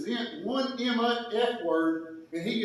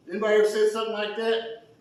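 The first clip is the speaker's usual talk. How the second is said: ordinary delivery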